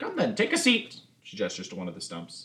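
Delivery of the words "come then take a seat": put-on very high-pitched voice of an aged dwarf woman. Narrating a role-play scene, the speaker voices an old woman character: old dwarven woman voice. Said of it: "you see this kind of very old dwarven woman".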